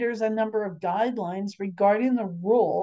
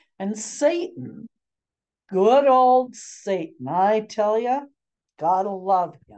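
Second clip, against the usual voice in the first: tongue-in-cheek, sarcastic, ironically fond tone; 4 dB louder than usual. Explaining the spiritual side of sexual temptation: sarcastic. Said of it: "And I'm being sarcastic".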